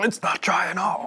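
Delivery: hoarse, raspy voice. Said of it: "[In a Hoarse Voice]".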